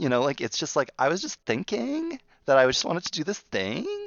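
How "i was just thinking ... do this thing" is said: statement ending with upward rise on thing. Acting out making everything a question, with an upward inflection ending on thing. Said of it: "The upward inflection in everything. ... It's a question".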